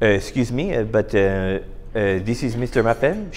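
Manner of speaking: put-on French accent. Retelling a phone call from a lady at Share Services in Ottawa, fake French accent. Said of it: "She didn't have a French accent. I just find it funnier to do that way".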